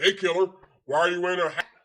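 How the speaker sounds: very loud, gung-ho, showy needling tone. Describing the one guy who always shows off, the speaker does an imitation of an alpha show-off. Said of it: "try to be alpha and be the most moto".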